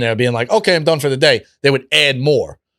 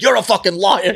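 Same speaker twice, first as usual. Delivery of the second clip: mock, high, screamed, accusatory delivery; 7 semitones higher than usual. Retelling a two a.m. phone fight with another guy: imitating a man screaming. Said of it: "He's screaming".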